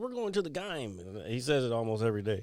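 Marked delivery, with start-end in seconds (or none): 0.0-1.0 put-on very high-pitched old-man voice. Quoting a role player's character about going to the gym: Eugene Zuckerberg old man voice. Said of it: "he does the old man voice so well".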